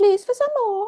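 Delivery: cute, little, very high pleading voice. Describing someone showing up to the universe asking for more, in a cute little Oliver Twist voice. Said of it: "In your cute little Oliver Twist voice".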